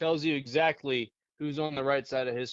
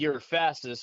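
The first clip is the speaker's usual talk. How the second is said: normal talking voice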